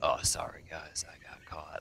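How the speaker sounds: low, flat, emotionless whispered monotone. Imitating a player's reaction after getting caught: imitating a player's low monotone voice. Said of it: "it's very low and monotone".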